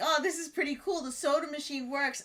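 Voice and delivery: ordinary talk, nothing marked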